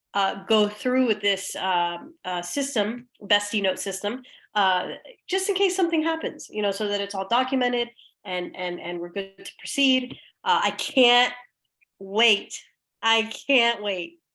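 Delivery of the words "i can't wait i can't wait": heavy sarcasm, deliberately stretched into a slow drawl. Saying they look forward to the new bestie note system: sarcastic tone. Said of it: "Are we hearing that sarcasm again".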